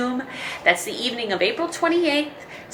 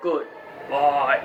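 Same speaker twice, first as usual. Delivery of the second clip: very low, very deep, deepest possible voice; 10 semitones lower than usual. Leading a goodbye rhyme, saying goodbye in a deep low voice. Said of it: "say goodbye as deep as we can".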